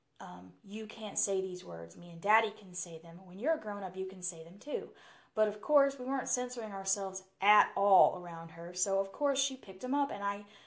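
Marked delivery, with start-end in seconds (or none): none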